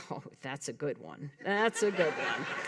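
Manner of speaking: low, soft mutter under the breath. Retelling a reply to a stranger's compliment: imitating muttering under breath. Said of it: "under my breath".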